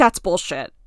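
acted defensive, outburst-like tone. Retelling a reunion guest's reply to an apology: imitating a defensive retort. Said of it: "she gets pretty defensive and she's like".

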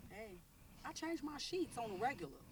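very quiet, hushed woman's voice. Defending oneself to friends, sounding like the lady in the shop. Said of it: "You sound like the lady in the, in the shop".

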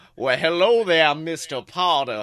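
low, fake Southern American accent. Imagining an evil Slytherin greeting Mr. Potter, in a put-on Southern accent. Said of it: "I would love if every evil Slytherin had a Southern accent".

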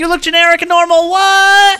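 mock shocked, very high, loud goofy yelp.

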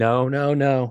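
"no" said as a mild yell. Retelling getting bad news while driving: retelling a yell. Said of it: "And then I just start yelling".

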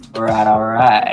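put-on Texan drawl. Doing a Matthew McConaughey impression: Matthew McConaughey impression. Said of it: "his Matthew McConaughey impression".

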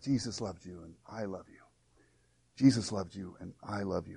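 barely audible, very soft, hushed whisper. Retelling a woman's words to a little boy on the way to church: whispering. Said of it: "and just whisper".

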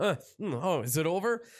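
drowsy, groggy, half-awake, just-woken voice. Retelling a character who dozed off and wakes up: imitating someone just waking up. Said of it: "Mordecai dozes off, wakes up".

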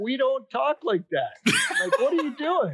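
mock dismay, high and laughing.

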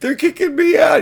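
very high-pitched, loud screeching scream. Retelling a man being kicked out by security, retelling a scream. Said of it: "He's screaming at Carrot Top".

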